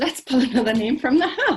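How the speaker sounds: loud, giggly delivery, laughing through the words. Speaker pulling another name from the hat, giggling. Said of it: "I can't stop giggling".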